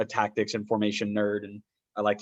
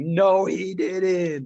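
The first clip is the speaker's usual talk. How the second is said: very high, shrill, loud disbelieving scream; 9 semitones higher, 5 dB louder than usual. Retelling watching a stoppage-time goal while live recording: imitating their own screaming. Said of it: "we were all just screaming".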